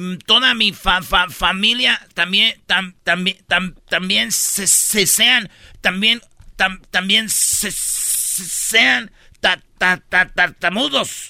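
put-on acted stuttering kid, syllables repeated over. Playing a boy asking a genie for a wish: acted stuttering kid. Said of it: "niño tartamudo".

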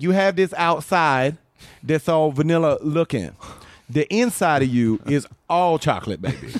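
full-on sassy delivery in a woman's voice.

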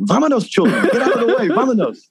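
very high, shrill yelling with wildly swinging pitch. Recounting a movie scene where a character in a closet starts yelling, retelling a yell. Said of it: "he just starts yelling".

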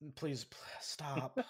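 very soft, low pleading voice.

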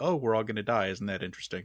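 ordinary delivery

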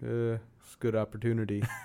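mock-unenthusiastic yes. Retelling how he answered a question about going to Sacramento, imitating an unenthusiastic yes. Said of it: "that sounds like no".

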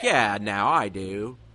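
slow, loud, drawn-out bad American accent. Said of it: "he would just have a really bad American accent".

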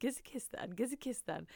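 creepy, pestering, repetitive insistent tone. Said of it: "You make him sound really creepy".

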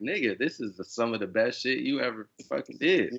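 ordinary talk

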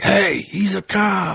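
mock drunken voice, very high, creaky and drawn out. Retelling how a friend at the bars called out his job: imitating a drunk friend. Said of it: "he would get so drunk, and then he'd be like".

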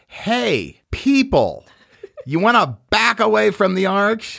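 put-on very high, drawn-out top-of-the-lungs holler. Retelling how someone yelled at people near the arch: imitating someone yelling at top of voice. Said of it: "somebody yell at the top of her voice".

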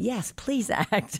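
high, slow, exasperated pleading. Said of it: "my mother was like".

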